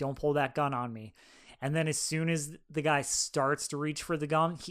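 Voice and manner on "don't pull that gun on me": put-on calm voice. Retelling a scene where Barry warns a gunman: imitating Barry's calm warning. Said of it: "he's just walking to him fully calm".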